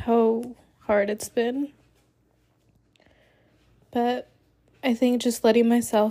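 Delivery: speaking through tears. Speaker sharing what has helped through a hard time, crying while talking. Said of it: "I feel like I can't stop crying".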